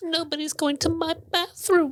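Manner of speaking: very high-pitched ghost voice. Joking about Hogwarts ghosts, doing a Moaning Myrtle impression. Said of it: "That's your most shockingly good impression".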